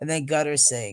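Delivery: normal talking voice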